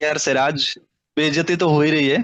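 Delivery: ordinary delivery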